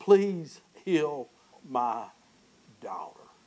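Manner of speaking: acted-out begging, pleading tone. Speaker retelling how Jairus appealed to Jesus, acting out begging. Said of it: "The Bible says that he he begged".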